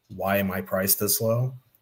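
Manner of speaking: ordinary talk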